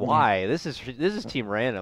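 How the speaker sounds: ordinary talk, nothing marked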